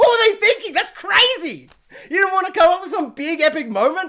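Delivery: stunned, high, loud, disbelieving outburst.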